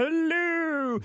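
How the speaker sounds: very high goat voice, "hello" drawn out. Speaker recalling how he and his brother used to talk, in a goat voice. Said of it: "talking like the goat".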